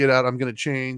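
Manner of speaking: ordinary delivery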